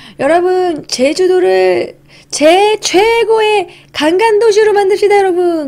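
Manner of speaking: 관광 fumbled and garbled, slow, high, speech-making tone. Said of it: "김영삼 대통령도 이 관광 발음을 잘 못해가지고".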